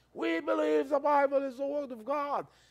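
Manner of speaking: high, loud, acted-out proclaiming shout. Recounting what a man started shouting, retelling a guy's shouting. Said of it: "the guy started shouting".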